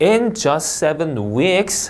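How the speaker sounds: rising pitch on "weeks", left open. English reading lesson, sentence-opening phrase read with rising pitch on weeks. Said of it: "하고 올려 읽어요".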